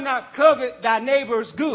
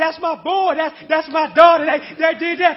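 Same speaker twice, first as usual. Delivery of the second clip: mock excited voice, much higher; 4 semitones higher than usual. Urging listeners to get excited about God, imitating an excited parent. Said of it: "You get excited about your child".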